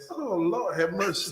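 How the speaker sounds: words broken up by laughter throughout. Reacting to a guest introduction being read out, laughing while talking. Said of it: "Stop laughing, bro".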